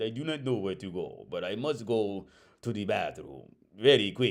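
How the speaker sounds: put-on blend of Russian and Italian accents. Imitating how a game character speaks: Gloria voice, Russian-Italian accent. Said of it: "almost like a Russian mixed with Italian kind of sound".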